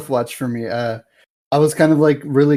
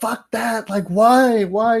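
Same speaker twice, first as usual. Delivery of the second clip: frustrated yelling, high and drawn out; 9 semitones higher than usual. Describing a show that frustrated them, the speaker acts out yelling at the screen. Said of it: "I was like yelling at the screen".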